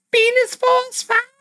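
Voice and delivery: high-pitched put-on voice. Talking about the X-Men, say the story title in a high-pitched voice. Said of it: "I feel like I had to do it in that voice".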